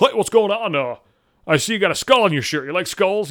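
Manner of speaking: douchey guy voice, forced and awkward. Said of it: "So he's like".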